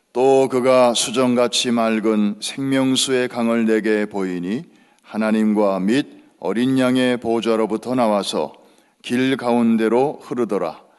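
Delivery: loud, full-voiced group reading in unison.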